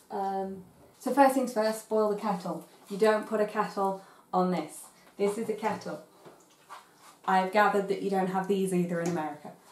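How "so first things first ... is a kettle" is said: ordinary talk, nothing marked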